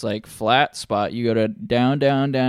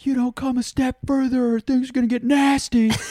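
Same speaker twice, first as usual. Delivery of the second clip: very high-pitched, shrill, threatening screaming; 13 semitones higher than usual. Retelling a confrontation at seventeen, acting out screaming back at him: retelling a scream. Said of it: "I'm screaming back at him".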